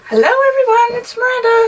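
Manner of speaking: very high-pitched voice, pushed up. Greeting everyone at the start of the recording, high-pitched voice. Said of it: "I'm talking in a high-pitched voice like this".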